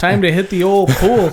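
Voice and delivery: loud, hammed-up put-on Canadian accent. Joking with a co-host about people from canada, in a put-on canadian accent. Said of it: "my best Canadian accent".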